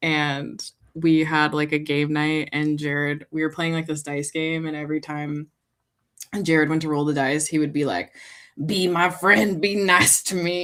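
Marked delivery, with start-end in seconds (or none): 8.6-10.6 slow, possessed, demon-like voice. Retelling what Jared says when rolling dice at game night: imitating Jared's demonic voice. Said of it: "you guys have demonic voice".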